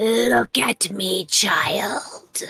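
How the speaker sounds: eerie, creepy warlock voice. A warlock speaks telepathically to a child in a creepy warlock telepathic voice. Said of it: "use her creepy warlock telepathic voice".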